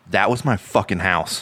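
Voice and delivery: put-on angry monster voice. Retelling a movie scene where Godzilla rises from the water: angry Godzilla voice. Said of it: "looks at them in the submarine and is like".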